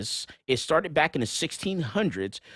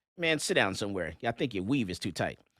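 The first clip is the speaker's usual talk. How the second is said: ordinary delivery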